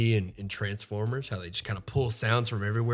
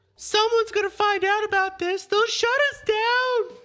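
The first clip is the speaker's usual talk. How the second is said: loud, very high-pitched man voice; 6 dB louder than usual. Narrator describing a Kinku speaking in someone else's voice; Mister Light's voice mimicked. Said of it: "begins to say in Mister Light's voice".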